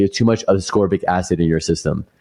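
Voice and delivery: ordinary talk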